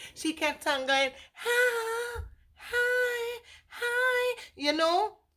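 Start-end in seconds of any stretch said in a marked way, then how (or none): 1.3-4.4 very high, listless, drawn-out and bored delivery. Showing how a woman kept greeting, imitating her repeated hi. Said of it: "it was boring to say, like very boring".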